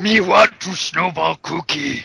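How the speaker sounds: gravelly, creaky monster voice. After a friend asks when Cookie Monster joined the group; Cookie Monster voice. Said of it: "When the fuck did Cookie Monster join".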